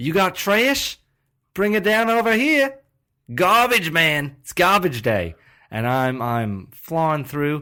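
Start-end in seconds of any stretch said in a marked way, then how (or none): 0.0-5.3 put-on Australian accent yelling, much higher, louder. Speaker acting out a garbage-man bit, yelling in Australian accent. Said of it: "I'm losing the accent".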